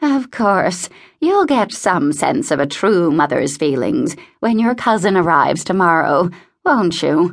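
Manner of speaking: ordinary delivery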